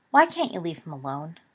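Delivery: ordinary delivery, nothing marked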